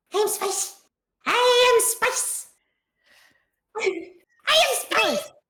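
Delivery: very high, slow, drawn-out kitten squeak. Voicing the kitten Dust Bunny in the game: put-on kitten voice. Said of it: "I now have to come up with a voice for Dust Bunny".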